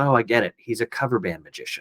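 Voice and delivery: quiet half-whispered voice. Retelling what a hero said, leaning over at a magic show: imitating a half-whisper. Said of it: "he leans over and he whispers".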